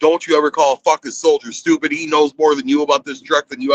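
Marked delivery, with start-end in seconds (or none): none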